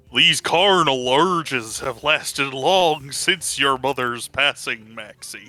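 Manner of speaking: silly, goofy put-on cartoon voice. Joking about acting goofy, a speaker says the line in a goofy voice. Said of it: "say the words carnal urges in a goofy voice".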